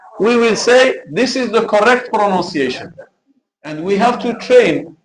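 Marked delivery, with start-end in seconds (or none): none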